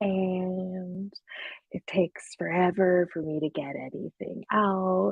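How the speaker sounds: taking forever, very slow. Demonstrating how they talk on their comedy meditation podcast, talking really slow. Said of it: "I talk really slow like this".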